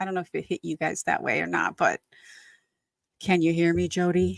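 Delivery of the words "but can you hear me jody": put-on very serious tone. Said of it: "was very serious".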